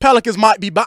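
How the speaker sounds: loud, high, hyped-up, terrible Australian accent.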